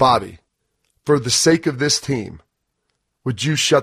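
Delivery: very stern, measured, dramatic pauses, no yelling. Retelling how the coach told the speaker to shut up: imitating a very stern coach. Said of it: "It was very stern".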